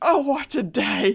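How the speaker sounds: high, very loud, manic, drawn-out unhinged cry. Describing an off-putting man's voice that cries out: imitating a near-lunatic cry. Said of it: "It's like on the edge of lunacy".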